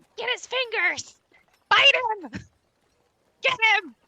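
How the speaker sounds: squeaky, tiny, very high chicken chatter voices. Game master voicing chickens in the crate a player is handling, in little voices. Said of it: "You start hearing these little voices like".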